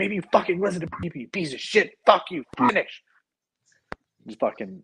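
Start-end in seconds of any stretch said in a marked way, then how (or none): 0.0-3.0 put-on very high, loud, furious swearing outburst. Recounting what he snapped at the man with the drill, retelling an angry outburst. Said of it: "I was so mad".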